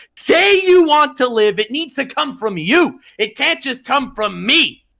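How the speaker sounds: enraged, full-fury, top-of-lungs yell. Retelling a scene where a calm agent yells at Robin, imitating a furious yell. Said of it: "yells like with a fury at the top of his lungs".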